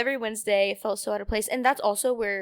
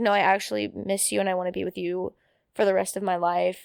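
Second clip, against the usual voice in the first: ordinary talk, nothing marked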